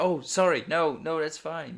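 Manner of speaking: put-on very polite, courteous, easygoing apologetic tone. Retelling how a creepy vampire in a scene answers: imitating a very polite man. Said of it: "the guy's, like, so polite as well".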